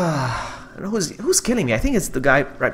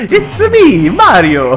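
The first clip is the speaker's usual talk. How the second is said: cartoonish Italian accent, higher, louder; 9 semitones higher, 8 dB louder than usual. Player doing a side quest announces an impression, then uses a Super Mario voice. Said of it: "I'll do the Super Mario".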